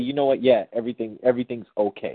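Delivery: ordinary delivery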